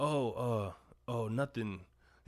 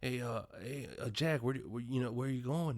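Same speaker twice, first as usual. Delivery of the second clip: imitated stutter. Retelling a movie scene where a character asks a question: imitating a stutter. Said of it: "and he has a stutter".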